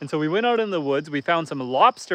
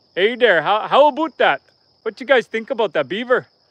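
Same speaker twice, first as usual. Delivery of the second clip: accent from Alberta; 5 semitones higher, 5 dB louder than usual. Speaker mimicking what people imagine a Canadian accent sounds like, exaggerated Albertan accent. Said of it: "they're thinking of like a, a an Albertan accent".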